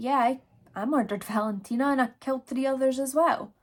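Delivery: mock blatant sarcastic tone. Retelling a suspect's confession to police: imitating a blatant, sarcastic confession. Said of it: "sarcastically just come forward".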